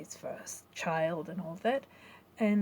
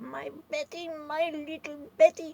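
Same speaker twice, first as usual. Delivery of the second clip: mock very high, sneering, jealous taunting tone; 9 semitones higher, 3 dB louder than usual. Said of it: "she was mimicking my father's tone".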